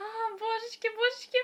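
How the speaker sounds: very high, gushing squeal of delight. Recalling when a favourite antagonist was first shown; re-enacting inner squeals. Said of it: "в душе такие, я не знаю, визги".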